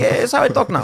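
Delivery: put-on Russian accent. Joking about a caller from Russia who is asked about the accent, reply in a put-on Russian accent. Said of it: "calling me from Russia with a Russian accent".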